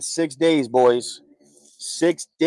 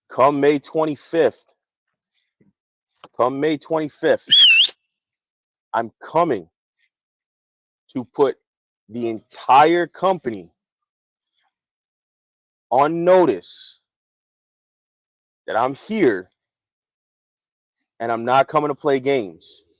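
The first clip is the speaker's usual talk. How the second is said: speaking slowly. Speaker addresses everyone on the roster; speaking slowly. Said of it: "I'm gonna say this slow".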